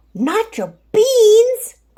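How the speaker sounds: crying out in outrage. Narrating a story, a character cries out about the stolen beans: outraged cry. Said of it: "cried Skipito, outraged".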